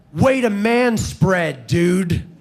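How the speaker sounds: mock, loud, really nasty hostile tone. Retelling what a woman said while shoving past a man, acting nasty and hostile. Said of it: "Like really nastily and in a hostile tone of voice".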